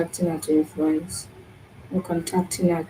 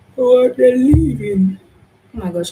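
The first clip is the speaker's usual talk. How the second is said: talking through a yawn, higher and louder; 7 semitones higher, 8 dB louder than usual. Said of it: "I'm sorry I keep yawning".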